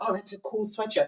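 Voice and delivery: put-on whisper. Retelling how people comment on the speaker's sweatshirt, imitating someone whispering. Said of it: "why are you whispering?".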